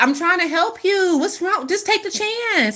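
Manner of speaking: high, urging, pleading voice.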